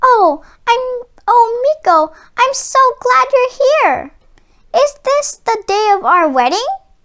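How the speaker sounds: small, sweet, tiny high-pitched storybook mouse voice. Storyteller reading the little mouse greeting Meeko: tiny mouse voice. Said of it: "but the only living thing in sight was a little mouse on a table. / she said, / came a tiny voice".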